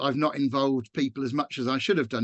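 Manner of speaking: ordinary talk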